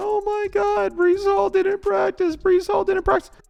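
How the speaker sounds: very high, loud, sobbing, crying wail. Retelling Danny's reaction to fantasy football news, imitating Danny crying. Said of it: "Danny crying, going".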